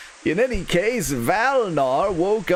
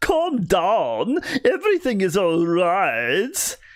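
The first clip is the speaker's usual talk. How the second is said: theatrical swooping vampire drawl, right drawn out. Voicing the doctor character calming Valnar: vampire voice. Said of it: "mysteriously has vampire voice".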